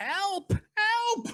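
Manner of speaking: very high, far-off, distant yell. A game narrator voices someone heard yelling in the distance, distant yelling for help. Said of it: "you all hear someone yelling in the distance".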